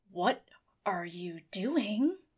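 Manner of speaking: low voice through clenched, gritted teeth. A startled character confronts the figure crouched under his desk, through gritted teeth. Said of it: "through gritted teeth".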